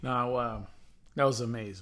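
very quiet, dry sarcastic murmur. Reacting to the other speaker's football prediction: sarcastic.

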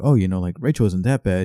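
ordinary delivery

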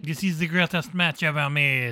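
put-on French accent. Quoting them calling it the greatest match ever made, put-on french accent. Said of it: "I'm doing French again".

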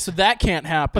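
ordinary delivery

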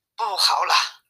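ordinary delivery

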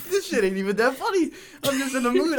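laughing while talking. Talking about someone's very long name, in a mood: can't stop laughing. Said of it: "I can't stop laughing right now".

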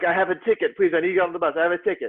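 half-yelled, mild calling out. Speaker retelling a man in a crowd trying to board a bus, retelling a man's yelling. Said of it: "There was one guy who was just yelling".

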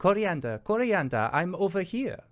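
very high coaxing call. Voicing Shar luring a player in another character's voice: Shar mimicking Oliviette's voice. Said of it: "And from Shar's voice says".

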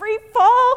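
very high-pitched, cracking, breaking-up voice. Retelling his answer as a cadet before a skydive, with a cracked voice. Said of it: "So I kind of cracked voice".

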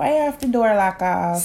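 put-on, fake Jamaican accent. Performing a line after being urged to do it: fake Jamaican accent. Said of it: "See? See?".

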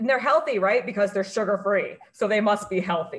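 heavily sarcastic, dripping with sarcasm. Talking about foods once thought healthy, the speaker tells everyone: super sarcastic. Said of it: "I'm being super sarcastic, everyone".

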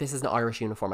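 ordinary delivery

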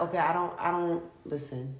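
normal talking voice

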